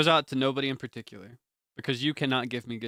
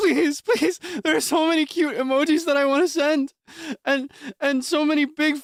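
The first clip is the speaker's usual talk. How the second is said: put-on pleading prepubescent teen voice, much higher, louder; 13 semitones higher, 4 dB louder than usual. Begging for Discord Nitro, in a pleading prepubescent teen voice. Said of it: "I sound like a, a prepubescent teen".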